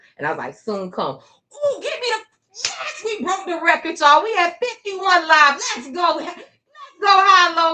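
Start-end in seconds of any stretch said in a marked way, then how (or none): 1.2-7.8 very high, thrilled, excited yelling. Livestreamer celebrating a record number of live viewers; excited yelling. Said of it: "Sorry if I'm yelling in y'all ear".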